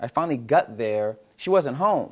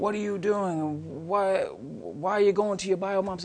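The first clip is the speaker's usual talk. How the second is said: put-on screaming, yelled, accusing and demanding; 6 semitones higher, 4 dB quieter than usual. Retelling a call from the adoption agency, imitating someone screaming.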